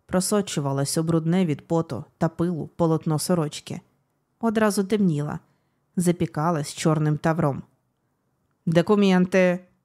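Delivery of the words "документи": barked, sharp, forceful delivery. The commissar addresses the wounded Bogdan, barking. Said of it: "рявкнув комісар".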